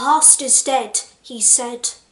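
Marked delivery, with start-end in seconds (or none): none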